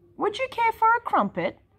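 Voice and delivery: cheery, bright robot voice, pitched very high. A robot lying on its back speaks to the one who tripped over it, bright. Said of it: "Asked the robot brightly".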